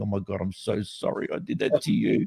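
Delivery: slow, put-on tearful crying, sorry tone. Retelling how the other driver apologized through her car window: imitating her crying apology. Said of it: "and she was crying".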